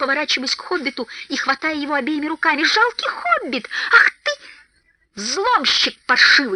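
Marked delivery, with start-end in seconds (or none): 2.6-6.6 indignant, outraged, swooping yell. Grabbing a frightened hobbit with both hands, yelling in outrage. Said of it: "завопил Торин".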